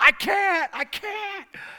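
very high-pitched, very slow, drawn-out wailing scream. Retelling screaming back while driving too fast: imitating own past screaming. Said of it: "I was screaming as loud as I could".

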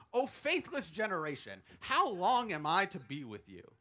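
ordinary delivery

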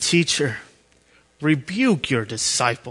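sneering, scornful, snarling, contemptuous delivery. Reading verse 39, quoting the Pharisees in the crowd, mock-snarling. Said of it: "You can hear the snarling in their voice".

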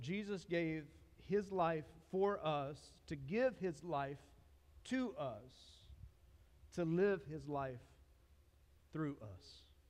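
slow, measured, weighty, deliberate reading. Speaker rereading a line aloud to listeners, reading slower. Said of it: "I'm going to read this slower".

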